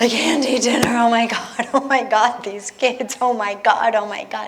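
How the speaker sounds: hysterical speech forced out through sobs. Retelling refusing dinner after a day in the slums: imitating her own hysterical sobbing. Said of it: "I'm sobbing hysterically".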